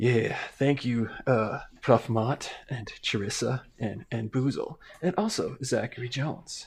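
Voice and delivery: mock seductive, sexy-sounding voice. Host thanking the base-tier patrons by name, put-on sexy voice. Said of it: "let me let me get my sexy voice on".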